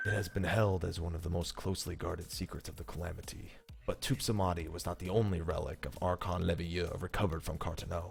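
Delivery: grand epic storytelling read. Speaker reads a lore script aloud the way someone else does, epic dramatic narration. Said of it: "read it in epic fashion like he does".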